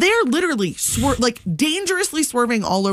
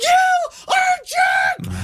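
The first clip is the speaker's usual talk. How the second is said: mock, very high, stretched-out, furious screamed yell. Recalling yelling at another driver while laying on the horn: reenacting screaming. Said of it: "And I'm screaming".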